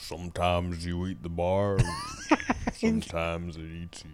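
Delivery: very quiet, low, hushed murmur, almost under breath. Performing a line after being asked for an impression: Sam Elliott impression. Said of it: "can you do a good Sam Elliott?".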